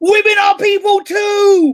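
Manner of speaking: very high, very slow, drawn-out screaming. Imitating somebody screaming a message at the top of their voice. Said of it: "somebody screaming at the top of their voice".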